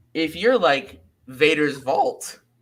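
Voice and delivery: voice cracking with excitement. Addressing saber retailers about sponsorship, voice cracking with excitement. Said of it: "my voice cracked on that one".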